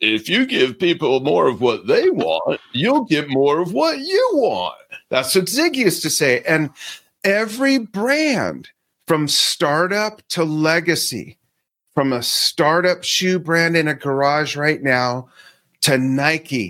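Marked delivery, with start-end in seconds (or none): 0.0-4.7 animated delivery, pitch swinging up and down. Quoting an old saying in his best Zig Ziglar voice. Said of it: "in my best Zig Ziglar voice".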